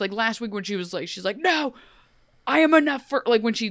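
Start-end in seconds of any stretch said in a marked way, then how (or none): 1.4-3.2 put-on guttural yell from the gut, drawn out, pitched up. Retelling how a TV character yells back at Nimue: imitating Emma's guttural yell. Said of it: "when she yells at Nimue".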